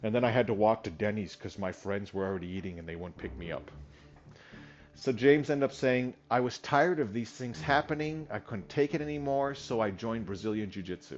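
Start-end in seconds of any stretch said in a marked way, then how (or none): none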